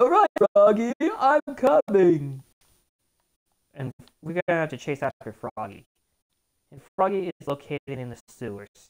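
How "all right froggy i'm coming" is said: very high-pitched, loud voice with big swoops. Player heading to Station Square to chase Froggy does Big the Cat voice. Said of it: "Big talks like this".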